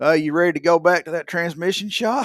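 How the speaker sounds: play-acted loud hollering. Retelling how a man called across a restaurant: imitating a man hollering. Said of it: "he hollers at me".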